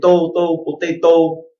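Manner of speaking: "potato" in Vietnamese accent. Speaker contrasts how a word sounds in two accents, Vietnamese accent. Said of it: "in a Vietnamese accent".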